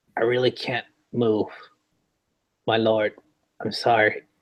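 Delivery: gentle, hushed, soft, quiet voice. A figure behind the altar speaks to its lord, in a soft voice. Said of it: "you hear a voice just softly say".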